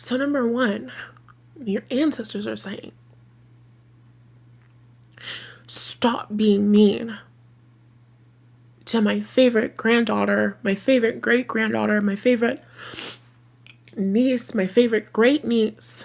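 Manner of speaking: tearful voice, crying while talking. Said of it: "I am crying".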